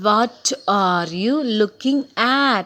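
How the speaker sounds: strong stress on the final word "at". Explaining strong forms at the end of a sentence: strong stress on final "at". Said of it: "So there is a stress on the word at".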